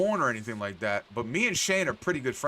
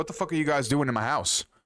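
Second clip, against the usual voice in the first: mock-angry, put-on woman's voice. Retelling being in Pam's house, the speaker quotes Pam: imitating Pam, mad. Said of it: "she's mad at me".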